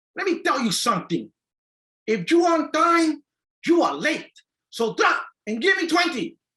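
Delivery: put-on drill sergeant voice, very high, thick Bronx Puerto Rican accent. Remembering a drill sergeant scolding recruits, imitating Drill Sergeant Negron. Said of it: "With this very thick Puerto Rican accent from the Bronx".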